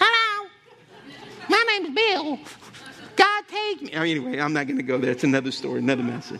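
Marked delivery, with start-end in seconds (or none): 0.0-3.9 very high, tiny, slow, drawn-out little voice. Retelling meeting a tall man, imitating a midget voice. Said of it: "he had a midget voice".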